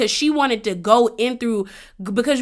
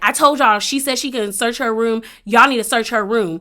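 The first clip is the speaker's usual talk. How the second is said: usual speaking voice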